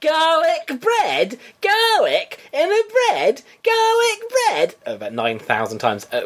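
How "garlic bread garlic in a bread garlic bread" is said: very high, slow shout climbing steadily in pitch. Retelling a comedy clip of Peter Kay, imitating Peter Kay shouting. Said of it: "him shouting the word garlic bread".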